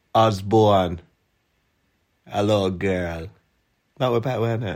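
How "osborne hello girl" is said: put-on Jamaican accent attempt, much slower pace. Told to try again, the speaker has another go at a jamaican accent. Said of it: "Try again".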